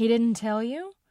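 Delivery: suspicious, distrustful, probing. A woman questions the narrator, suspicious. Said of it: "she asked suspiciously".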